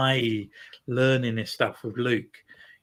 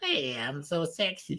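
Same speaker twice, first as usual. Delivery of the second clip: very slow, drawn-out, awful Southern American cartoon voice; 4 semitones higher, 6 dB quieter than usual. Mocking a cartoon Hutt who spoke like a Southern American cartoon: imitating Ziro's Southern American cartoony voice. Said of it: "That's quite a good impression".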